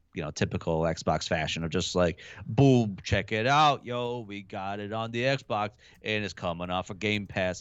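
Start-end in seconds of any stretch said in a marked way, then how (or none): 2.5-7.6 slow, drawn-out, big and showy bombastic announcer voice. Imitating a big bombastic Xbox game reveal: Phil Spencer impression. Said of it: "I tried to do my best Phil Spencer impression".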